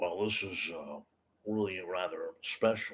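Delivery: soft, easy late-night talk-show host style. Giving an impression a go, say goodnight to Ed McMahon in a Johnny Carson impression. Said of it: "Johnny Carson saying goodnight to Ed McMahon".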